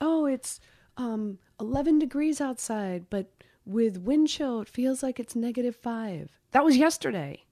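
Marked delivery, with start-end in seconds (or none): 0.0-6.3 put-on voice assistant voice. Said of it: "in Alexa fashion, she says".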